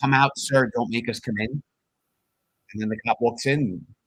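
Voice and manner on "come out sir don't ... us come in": usual speaking voice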